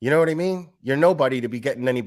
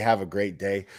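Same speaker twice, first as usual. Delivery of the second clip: acted low, superior, talking-down condescending tone; 6 semitones lower, 4 dB quieter than usual. Complaining about people who end online arguments, imitating condescension. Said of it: "people condescendingly say".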